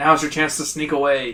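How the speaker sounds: usual speaking voice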